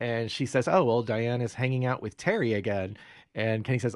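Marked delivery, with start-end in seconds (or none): none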